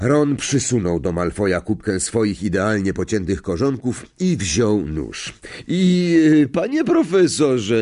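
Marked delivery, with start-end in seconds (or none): 5.7-7.8 high, loud voice swollen with spiteful glee. A narrator reads a character addressing the professor, full of malicious glee. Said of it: "głosem nabrzmiałym złośliwą uciechą".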